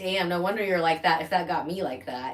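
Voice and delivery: ordinary talk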